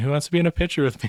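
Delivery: high-pitched shout, called out loudly. Narrating a character calling out for someone to join a selfie: shouting.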